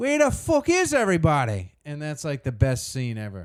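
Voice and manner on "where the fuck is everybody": very high, swinging, swooping tough-guy voice. Praising a film scene, quoting the entrance line as a Conor McGregor impression. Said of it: "He walks in all buff and he goes".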